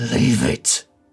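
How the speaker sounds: low-pitched voice. Narrating one of three squabbling voices, the deeper one. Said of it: "you hear the deeper voice say".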